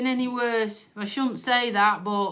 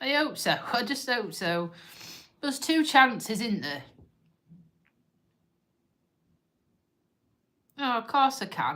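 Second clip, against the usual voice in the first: tearful voice, crying while talking. Talking about a beloved dog that died, crying while talking. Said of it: "Let me stop crying first".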